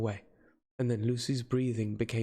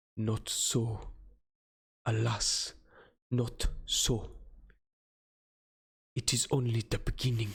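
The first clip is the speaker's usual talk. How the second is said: heavy with grave solemnity. Narrator reading a character's reply after the girl dies, with grave solemnity. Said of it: "He removed the flowers and lifted the silk handkerchief from her throat. / and with grave solemnity".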